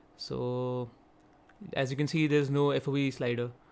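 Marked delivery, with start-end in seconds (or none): 2.3-3.5 hurried, run-together, rushed delivery. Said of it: "Sorry if I'm speaking too fast".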